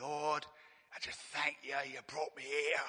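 put-on, imitated Cockney accent. Retelling how a pastor prayed, unlike the posh pastors the speaker knew: cockney accent. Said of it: "he was a real cockney".

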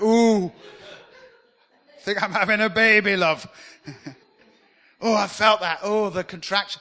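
mock loud, drawn-out labor groans. The speaker acts out a birth for the audience, imitating a woman in labor. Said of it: "it's the best impression I can do".

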